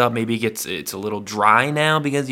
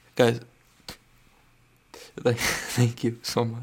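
mock tearful voice, choking up, holding back tears; 5 dB quieter than usual. Thanking listeners, joking about holding back tears: mock tearful. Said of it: "I'm actually holding back tears".

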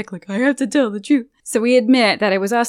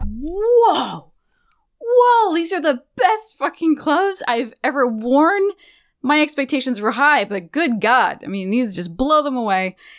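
mock thrilled, wowed gushing, high, swooping, long "whoa"; 5 semitones higher than usual. Retelling a man's reaction on receiving the gloves, imitating his excited reaction. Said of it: "he's so excited for these things".

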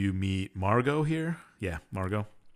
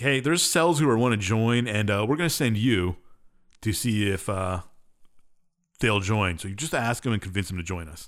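ordinary talk, nothing marked

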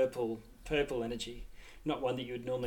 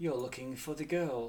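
sweet, honeyed, sugary hushed whisper; 5 semitones higher than usual. Voicing a creature speaking to the group, in a honeyed whisper. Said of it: "it whispers in a voice that sort of reeks of spices and honey".

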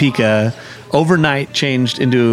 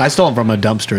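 ordinary delivery

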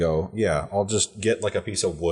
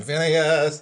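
high, calling-out shout; 7 semitones higher than usual. Shouting for a companion lost in the fog: shouting a name. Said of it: "I'm just shouting".

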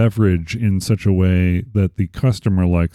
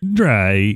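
put-on robotic voice. Repeating a word the way a robot would: robot voice. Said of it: "is that how you would say it as a robot?".

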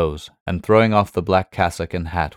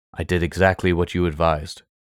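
ordinary delivery

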